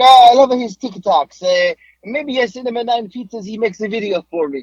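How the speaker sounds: high put-on Italian accent, male voice. Retelling a voice note from an Italian man who sent pizzas, in a put-on Italian accent. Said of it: "He's an Italian guy, so I got a voice note. He's like".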